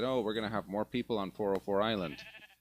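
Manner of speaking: plain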